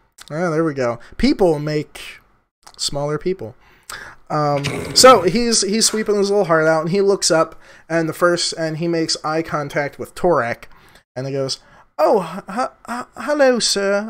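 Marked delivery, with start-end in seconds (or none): 12.0-14.1 very slow, stammering put-on British accent. Voicing a stable boy greeting a traveler: British accent. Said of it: "why he changed to British now".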